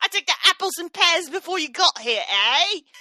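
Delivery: put-on old-time period London Cockney accent. Imagining how a woman talks when not being interviewed, 1810s cockney british accent. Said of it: "like an eighteen ten Cockney British accent".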